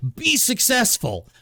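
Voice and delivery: shrill, very high-pitched screaming. Complaining about being told to succeed without help, imitating someone screaming. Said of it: "instead of just fucking screaming".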